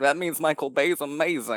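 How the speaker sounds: sarcastic snooty voice. Mocking film purists by quoting them: sarcastically imitating cinephiles. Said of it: "I love the cinephiles who are like".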